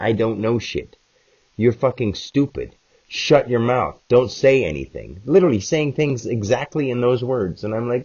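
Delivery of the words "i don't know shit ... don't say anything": ordinary delivery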